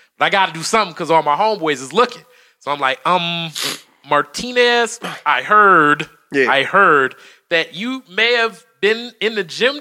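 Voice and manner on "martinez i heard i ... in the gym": ordinary delivery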